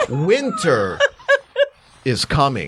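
swooping, sing-song delivery with wide pitch swings. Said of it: "you gotta say it differently".

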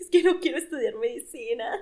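acted talking through sobs. Retelling what they said to their parents back then, imitating talking between sobs. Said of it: "entre sollozos".

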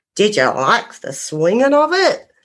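put-on strong, full-on Australian accent, no holding back. Retelling what a male spirit voice said: imitating a full-on Aussie accent. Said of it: "full-on Aussie accent comes through saying".

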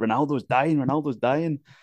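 half-voiced, urgent, alarmed put-on scream, said lightly. Retelling a teammate screaming outside a hotel room: imitating someone screaming. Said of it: "he said he's screaming, like".

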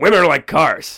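loud, booming celebrity impression voice. Quoting a famous line after being asked to do his voice: Tim Allen voice. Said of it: "set me up on his voice there".

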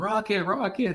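play-acted, shrill, very high-pitched scream. Recalling screaming for a player's autograph as a kid at a game, retelling a scream. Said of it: "I'm screaming for his autograph".

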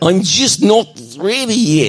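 high-pitched put-on Russian dictator accent. Reading a story aloud, voicing Ashley: Russian dictator voice. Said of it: "She's a Russian dictator".

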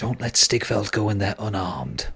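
soft, close, secret half-whisper. In a role-play scene, before she leaves, she half-whispers in the listener's ear. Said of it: "she whispers in your ear".

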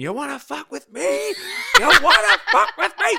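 shrill, hoarse, rising screaming shout. Retelling what Rosie kept shouting down the mic: imitating someone shouting. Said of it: "you were shouting".

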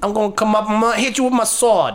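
put-on New Jersey-accented character voice. Voicing a character attacking a player with a sword, New Jersey accent. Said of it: "Why does he sound like he's from New Jersey?".

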